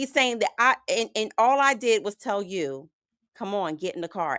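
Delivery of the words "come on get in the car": put-on calm, gentle, nice tone, quieter. Retelling how he asked her to get in the car: imitating a nice, calm request. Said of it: "he said it so nice and calm".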